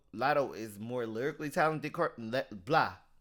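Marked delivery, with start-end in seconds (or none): 1.9-2.9 stuttering, tripping over words. Giving an opinion and stumbling over the words: stuttering. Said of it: "Why I'm stuttering?".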